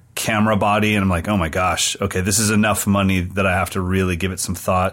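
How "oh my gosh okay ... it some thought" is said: ordinary talk, nothing marked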